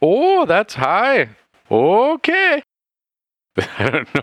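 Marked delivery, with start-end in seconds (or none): 0.0-2.6 put-on very high, very slow, drifting, swooping European accent. In a role-play, a character reacts to a price, accent wandering across europe. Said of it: "This accent started. It's just traveled all of Europe".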